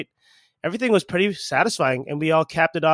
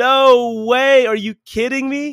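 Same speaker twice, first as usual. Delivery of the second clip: very slow, high, loud scream, drawn-out "no"; 8 semitones higher, 6 dB louder than usual. Recounting seeing Matt walk over waving his lost wallet, retelling a scream. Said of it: "I literally screamed".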